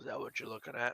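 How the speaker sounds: barely voiced, hushed whisper under the breath. Voicing Bazak, asking a shipmate about a distant sighting: whispering under his breath. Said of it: "Bazak whispers under his breath".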